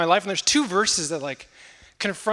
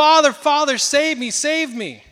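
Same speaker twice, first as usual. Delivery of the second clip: mock pleading, high, drawn-out yell; 7 semitones higher, 4 dB louder than usual. Telling a story of a son caught in a riptide: retelling a son yelling for help. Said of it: "And he's yelling".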